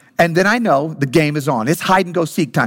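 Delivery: ordinary talk, nothing marked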